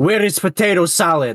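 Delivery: put-on heavy Russian accent, laid on thick. Retelling what a customer said to him at a deli, in a thick Russian accent. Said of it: "he's got a thick Russian accent".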